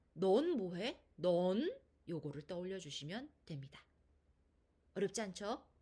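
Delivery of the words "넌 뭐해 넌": "neon" with rising second tone, slightly louder. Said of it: "이성의 음의 높이".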